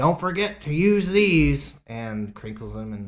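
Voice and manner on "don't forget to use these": mock brash, loud, obnoxious middle-aged man voice. Retelling a father's words when handing over condoms: imitating someone loud and obnoxious. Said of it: "very loudly and obnoxiously".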